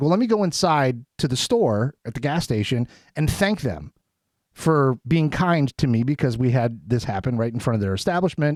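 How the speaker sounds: ordinary talk, nothing marked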